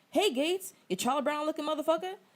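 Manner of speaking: stand-up comic ribbing delivery, pitched high. Reading aloud a comedian's stand-up bit: Chris Rock impression. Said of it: "I'm gonna do my best Chris Rock impression".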